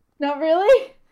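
sarcastic, disbelieving tone. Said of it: "I don't know if you're being sarcastic".

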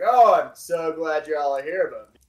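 big, booming, very loud, drawn-out voice. Describing a scene, the speaker imitates Bruce's booming voice. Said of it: "you're gonna hear a booming voice from Bruce".

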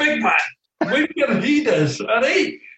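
put-on Scottish accent. Recall what George Graham used to say to you, as a George Graham impression in a put-on Scottish accent. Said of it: "Excuse my Scottish accent".

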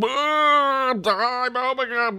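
put-on shrill, very high, loud drawn-out roaring bellow. Retelling a scene where a character smashes a present: imitating Omega bellowing. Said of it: "Omega starts bellowing again".

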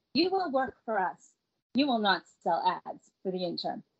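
usual speaking voice

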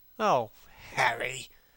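light, rippling with laughter. The lad answers Hallward, who says he has Harry; with a ripple of laughter. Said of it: "cried the lad with a ripple of laughter".

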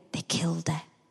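very quiet, hushed whisper, close to the ear. Retelling what someone said during magic tricks: imitating a whisper. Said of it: "just whispered in my ear".

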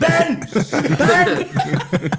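mock scream, yelled high and loud.

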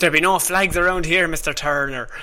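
put-on old-school seafaring pirate captain voice. Joking with another speaker about pirates, doing a Captain Barbossa pirate voice. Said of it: "You can do it much better than I can".

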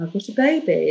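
normal talking voice

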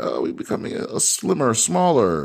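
sarcastic, derisive corporate announcer voice. Mocking how companies talk about cuts: mocking corporate talk. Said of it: "Why do they talk like".

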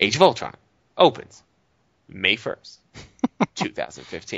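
dramatic, swooping news-anchor delivery with long pauses. Mocking how news reports announce a movie release date: dramatic pauses before the release date. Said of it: "they always say it like that. ... And what's all the pauses?".

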